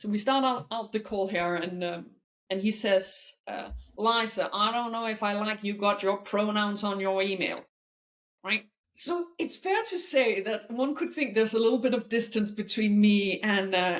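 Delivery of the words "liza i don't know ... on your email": bad, horrible put-on American accent. Retelling what a man said at the start of a call, in a bad American accent. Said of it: "a horrible American accent".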